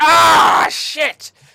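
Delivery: very loud, rough, high pained shout. Voicing a captain being bitten in battle: crying out in pain. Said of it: "he kind of cries out".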